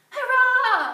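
very loud, high storybook cheer. The fish cheer as the fisherman flees into the waves; cheered. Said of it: "Cheered the fish".

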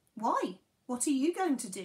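alarmed, frightened tone. Berno answers Tenko's question about handling the boat alone, asking in alarm. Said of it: "Berno asked in alarm".

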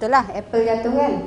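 normal talking voice

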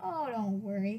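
ordinary talk

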